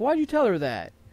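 put-on high-pitched, angry, pissed-off child's voice. Retelling what an upset kid said to him, imitating an angry kid. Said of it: "He was pissed".

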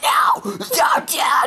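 put-on horror scream. Retelling how a girl screamed at her dad, imitating a horror-movie scream. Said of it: "that horror scream where it's like".

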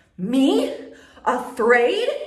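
very loud, full-throated, booming roar. Reading a story: asked if he is afraid, he bellows back. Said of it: "He bellows".

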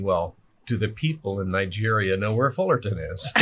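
ordinary delivery

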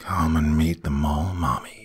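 put-on thick, syrupy, sticky voice, not boyish. Narrator reading a story, the boy's voice suddenly changed: syrupy, thick voice. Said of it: "It sounded syrupy and thick".

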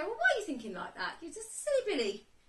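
high, sing-song, tinkly little fairy voice. Recounting an inner voice during an Ibogaine experience, tinkly fairy voice. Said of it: "I have this really nasty voice".

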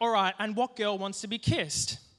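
normal talking voice

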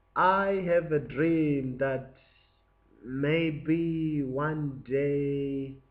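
very slow, hesitant, unconfident, unsure delivery. Reworking a famous speech line to show how it would sound, mock-unconfident delivery. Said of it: "that doesn't sound very confident".

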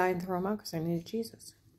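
ordinary talk, nothing marked

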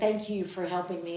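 normal talking voice

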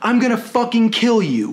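plain

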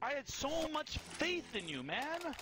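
genuine, very high, whiny complaining voice. In a multiplayer game, talking to a teammate, whiny. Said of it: "that was a genuine, like, whiny voice".

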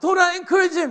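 loud, high shout. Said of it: "Everybody said".

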